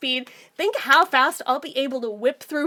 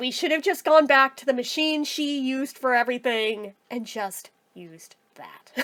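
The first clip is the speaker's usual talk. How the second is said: normal talking voice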